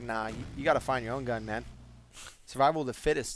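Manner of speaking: ordinary talk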